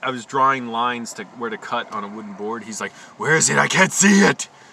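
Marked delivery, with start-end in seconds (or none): 3.2-4.5 booming, very loud, condescending fake serious voice. Retelling a condescending coworker on a film set, mocking his fake serious voice. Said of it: "Doing this fake voice".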